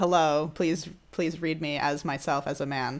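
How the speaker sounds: ordinary talk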